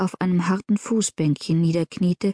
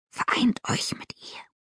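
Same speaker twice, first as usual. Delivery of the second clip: hissed, quieter. A frightening figure answers the exalted one, hissed. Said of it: "zischte die furchterregende Gestalt".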